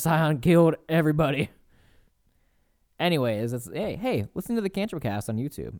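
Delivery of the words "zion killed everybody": put-on huffing and panting, higher and louder. Retelling characters coming out of Mount Zion: imitating huffing and puffing. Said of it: "huffing and puffing".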